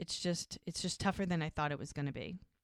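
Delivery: normal talking voice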